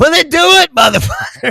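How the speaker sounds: put-on shrill, high-pitched, loud street-style yell. Retelling confronting a man who pulled a gun: imitating himself yelling. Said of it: "And I started yelling at him".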